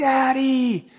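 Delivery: put-on very high, sudden screaming in a child's voice. Retelling how a son suddenly called out at night: imitating a child screaming. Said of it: "he all of a sudden just starts screaming".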